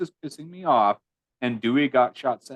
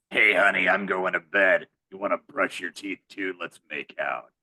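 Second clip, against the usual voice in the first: put-on voice-changer voice, lower; 6 semitones lower than usual. Imagining a mom in old home movies speaking: Ghostface voice. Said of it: "Maureen just has Ghostface's voice".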